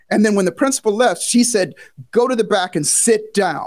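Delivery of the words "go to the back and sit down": put-on, very stern, severe, slow and deliberate. Retelling what the teacher said after the principal left: imitating a very stern voice. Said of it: "in a very stern voice".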